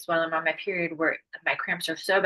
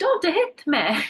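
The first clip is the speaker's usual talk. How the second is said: put-on, very high Italian accent; 12 semitones higher than usual. Crossing at a crosswalk, speaking to an approaching car, in an Italian accent. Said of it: "like in an Italian accent".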